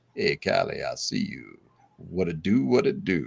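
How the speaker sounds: really deep voice, slow steady cadence. Imitating a man answering Callie's comment, in a really deep voice with a cadence. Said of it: "he has this really deep voice and he's got this cadence".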